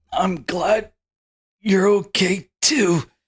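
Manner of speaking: effortful, slow, high words. Voicing a hurt character thanking a friend weakly: strained voice.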